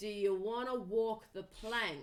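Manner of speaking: deep, booming, low male voice. Narrator voices a man on board the ship, deep booming male voice. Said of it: "deep booming male voice says".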